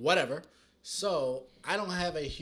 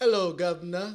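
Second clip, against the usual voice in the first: loud, ridiculous put-on British accent; 4 semitones higher, 8 dB louder than usual. In character and insisting he sounds British while the other speaker scoffs, fake British accent. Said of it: "I sound British".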